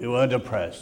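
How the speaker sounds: put-on growling old man voice. Retelling an old man's answer to why he went out to fight, retelling a growl. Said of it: "he growled".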